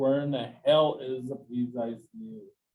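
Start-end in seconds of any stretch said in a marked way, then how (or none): none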